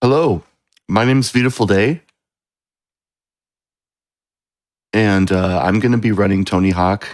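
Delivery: hoarse, shot voice, rattled off. Introducing themself before a speedrun, recovering from a cough: hoarse voice after a cough. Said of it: "my voice is kind of shot right now".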